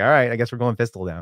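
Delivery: ordinary delivery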